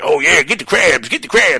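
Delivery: high, loud mock voice.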